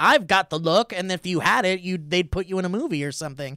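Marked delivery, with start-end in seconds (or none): 0.0-0.9 put-on old-timey golden-age Hollywood hopeful actor voice. Joking about how old studios cast actors, old-timey hopeful actor voice. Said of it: "walk into a studio and be like".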